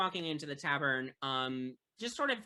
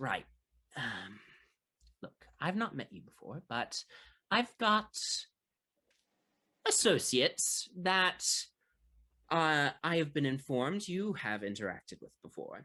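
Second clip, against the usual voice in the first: voice dropped and kept low. A stranger at the corner table starts talking to the players: lowered voice. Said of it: "he sort of lowers his voice and he says".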